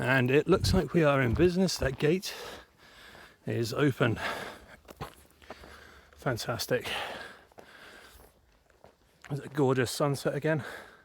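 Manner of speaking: breathless, out of breath. Reaching an open gate while walking outdoors, out of breath. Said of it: "I am absolutely out of breath".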